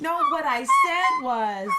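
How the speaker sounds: high, loud, slow protesting voice.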